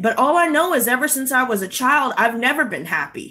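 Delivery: ordinary delivery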